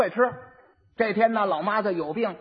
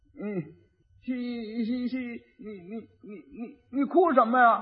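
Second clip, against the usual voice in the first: put-on stuttering simpleton voice; 3 dB quieter than usual. Acting out the fool asking the crying bride why she cries: stuttering fool voice. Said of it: "傻子就过去了".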